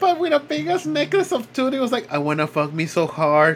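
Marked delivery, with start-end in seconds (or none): 2.1-3.6 very low, dropped, chest-deep movie-killer voice. Picturing a tooth-collecting man as Buffalo Bill and speaking as him, in a Buffalo Bill voice. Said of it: "Doing the Buffalo Bill voice".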